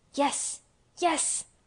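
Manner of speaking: voice barely above a whisper. Asked solemnly whether she can trust him, he answers her; almost whispered. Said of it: "he almost whispered his answer".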